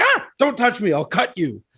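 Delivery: put-on high, crotchety old-man voice with swooping pitch. Quoting a character's first meeting with another character who reaches over: Chetney's grumpy old-man voice. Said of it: "ten of my favorite crotchety, grumpy old men quotes".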